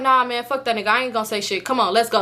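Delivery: ordinary delivery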